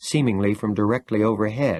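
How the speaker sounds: ordinary delivery, nothing marked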